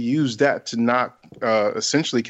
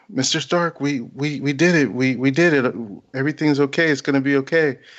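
put-on trembling, halting, quivering, stammering voice; 2 semitones higher than usual. Retelling a hero's words after the battle: imitating Peter Parker's quivering voice. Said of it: "he's just quivering in his voice".

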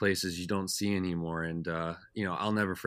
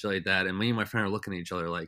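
normal talking voice

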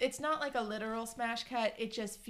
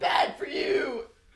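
mock overly dramatic delivery, louder; 2 semitones higher, 10 dB louder than usual. Retelling a scene where he turns away from her: imitating an overly dramatic line. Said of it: "It's the most dramatic shit".

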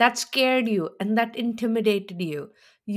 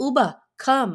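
put-on curt and disrespectful tone; 3 semitones higher than usual. Retelling how she summoned Uba: imitating a curt summons. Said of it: "you summoned her like".

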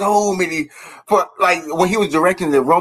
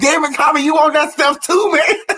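high-pitched, acted tough, fake brave voice; 9 semitones higher than usual. Retelling a Halloween sitcom episode scene: imitating Martin acting unafraid. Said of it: "And Martin act like he couldn't get scared".

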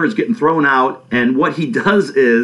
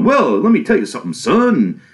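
put-on old Southern voice, higher pitch; 3 semitones higher than usual. Acting out how a movie character talks, in an old Southern Foghorn Leghorn voice. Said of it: "old southern, like Foghorn Leghorn".

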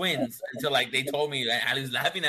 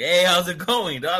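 swaggering, cocky tough-guy voice, raised and high; 5 semitones higher, 7 dB louder than usual. Retelling greeting a cousin at a party, imitating acting badass. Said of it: "all badass".

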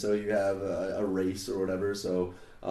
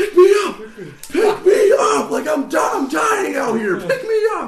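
shrill, booming, very high, very loud, drawn-out yell; 13 dB louder than usual. Knocked down in a fight, calling to a healer buddy, retelling a yell. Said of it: "yelling at him".

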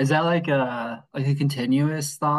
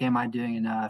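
ordinary talk

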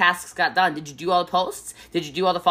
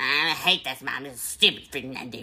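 put-on angry dog voice, lower and quieter; 5 semitones lower, 6 dB quieter than usual. Imitating a mad dog complaining about the early morning: imitating Wookie being mad. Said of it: "Wookie gets really mad".

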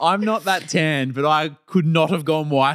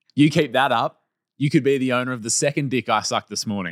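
ordinary talk, nothing marked

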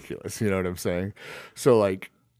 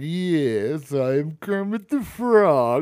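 very slow, high, evil put-on Russian accent, drawn-out "yes"; 7 semitones higher, 4 dB louder than usual. Retelling a movie scene where the impostor claims to be Kermit: evil Russian Kermit impression. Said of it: "doesn't even, like, like, try to mask his accent".

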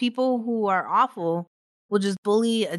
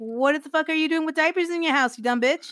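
high, mock furious yelling; 8 semitones higher than usual. Retelling getting mad watching Hoarders: retelling yelling at the TV. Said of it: "I start like yelling at the TV".

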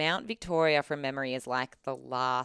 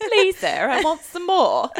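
very high, very loud Cockney accent; 12 dB louder than usual. Quoting a historical figure aloud, the speaker slips into a Cockney chimney sweep accent. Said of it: "sounded like a Cockney chimney sweep".

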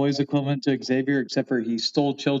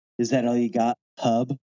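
put-on whisper, lower in pitch; 2 semitones lower than usual. In a joke scene, Wolverine whispers into another character's ear; Wolverine whisper. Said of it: "Wolverine whispers in his ear".

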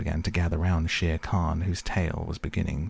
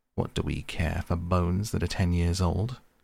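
ordinary delivery

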